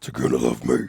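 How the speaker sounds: mock dark, guttural voice. Repeating the character's line in their own version: imitating a dark, guttural, scarier voice. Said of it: "It's more guttural".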